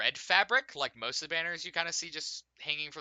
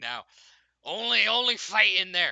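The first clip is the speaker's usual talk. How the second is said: put-on loud, pitched-up drunken talk; 5 semitones higher, 6 dB louder than usual. Retelling what a man said, imitating a very drunk man. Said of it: "he's very drunk".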